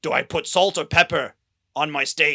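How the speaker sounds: loud, gruff older man voice, put-on Austrian accent. Comparing impersonations with Jeffrey's: Arnold Schwarzenegger accent impression. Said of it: "it's just like Arnold Schwarzenegger, kind of like".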